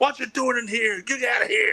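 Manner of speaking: high holler, muffled as if mouth full. Retelling a wrestler barging out of a locker room shower, yelling. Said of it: "he comes out with his mouthful of chew and his cowboy hat, wearing a towel, going".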